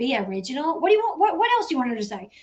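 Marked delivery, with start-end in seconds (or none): 0.0-0.8 softer, put-on mimicking voice. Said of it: "For you to be like".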